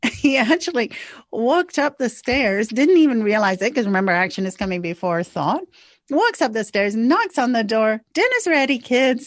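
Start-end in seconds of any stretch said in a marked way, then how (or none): 8.1-9.3 mock cheerful, delighted calling voice, pitched up. Retelling how a man who stopped yelling calls the kids: retelling a delighted call. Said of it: "in this delightful voice".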